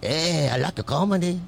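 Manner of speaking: put-on Mexican-sounding accent. Comedian retells a man who came up to him while eating; Mexican-sounding accent. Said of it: "It sounded Mexican".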